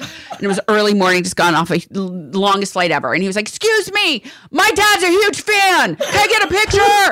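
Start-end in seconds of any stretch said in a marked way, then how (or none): 3.5-7.1 put-on very high, loud screaming kid's shout. Recounting a kid at the airport early in the morning, retelling a kid's loud shout. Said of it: "His voice was so loud".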